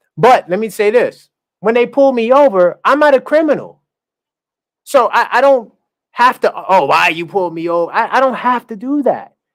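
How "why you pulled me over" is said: put-on hostile tone. Describing being pulled over by undercover police, acting out a mock-hostile question. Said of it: "Now I'm coming with hostility".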